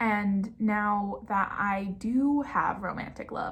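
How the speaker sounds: slow, drawn-out speech. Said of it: "I'm sorry that I'm talking slowly".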